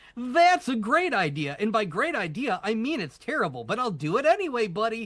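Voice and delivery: acted very high, swooping, sing-song sarcastic voice. Describing a game robot that agrees with everything: sarcastic Yes Man impression. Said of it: "he'll be like really sarcastic about it".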